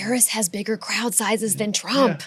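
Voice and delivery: joking whisper. Revealing a fact as if it were a secret: mock whisper. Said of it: "I have to whisper it".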